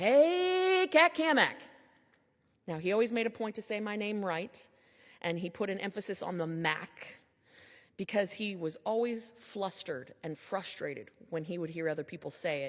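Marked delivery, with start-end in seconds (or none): 0.0-1.6 very high, loud booming voice, drawn-out "hey". Remembering how Doug always greeted the speaker, in Doug's loud booming greeting. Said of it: "greeted with a loud and booming".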